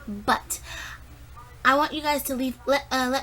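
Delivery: stammering, stuttering over a false start. Closing a video and asking viewers for comments, stuttering. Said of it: "I'm stuttering".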